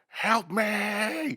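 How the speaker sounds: put-on very high, drawn-out wailing scream. Retelling a nightmare, hearing someone nearby: imitating someone screaming. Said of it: "I just hear someone screaming".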